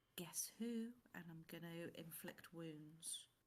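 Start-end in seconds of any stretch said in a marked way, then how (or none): 0.1-0.9 high, loud, theatrical stage whisper. Sneaking up behind an enemy, hands over his eyes: whispering in character. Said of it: "put my hands over his eyes and whisper".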